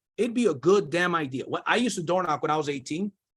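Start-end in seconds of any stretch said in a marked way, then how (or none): none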